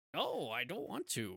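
very quiet, soft, reluctant muttering. Acting out Yoda refusing Ben's request: imitating Yoda. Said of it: "and he's like".

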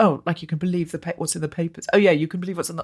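imitated sarcastic tone. Retelling a woman's reply to the speaker, imitating her sarcastic reply. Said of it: "really sarcastically".

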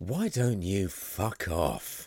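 best-attempt put-on Northern London accent. Actor delivers a requested line from his audition tape, Northern London accent. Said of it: "in your best Northern London accent".

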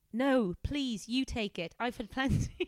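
properly posh, slightly high voice. Reading a story aloud, voicing Helen's line in Helen's properly posh voice. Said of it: "Helen is gonna be properly posh".

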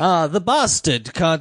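put-on English accent. Retelling a scene, quoting Tyrion: Tyrion English accent. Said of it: "he actually has a worse English accent than that".

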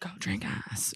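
soft, unvoiced, barely audible breathed whisper.

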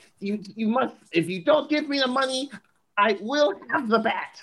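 very high, cartoonish voice. Mocking a hacker's ransom note: cartoonish Batman villain voice.

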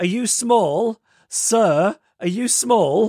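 put-on loud, shrill, very high four-year-old child voice. Retelling a story, the speaker quotes a four-year-old questioning a man, in a loud four-year-old voice. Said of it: "this loud... 4-year-old is just going".

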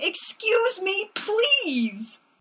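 polite mock shout, high and slow. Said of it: "she is shouting".

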